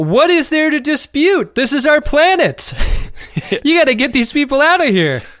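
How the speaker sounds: acted, booming, very loud, high-pitched voice. Retelling what a man said in a dispute, imitating a very loud guy. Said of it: "This gull in a very loud voice is like".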